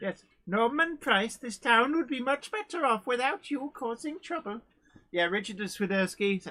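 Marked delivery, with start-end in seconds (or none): 0.5-4.6 funny put-on Welsh accent, pitched up. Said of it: "gets stuck somewhere in Pontypandy".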